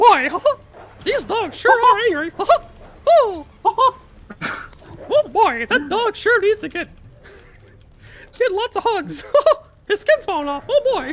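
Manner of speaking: squeaked out high and loud. Answering a donor's request, doing a Mickey Mouse voice. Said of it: "Can I get a Mickey Mouse voice?".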